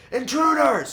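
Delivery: loud, very high-pitched shout. Voicing a person raising the alarm about intruders: yelling. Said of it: "you hear yelling".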